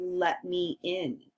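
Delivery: plain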